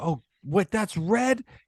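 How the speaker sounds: mock very high-pitched, disbelieving, astonished freak-out. Retelling a colorblind man seeing red for the first time: imitating someone freaking out. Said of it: "He was freaking out".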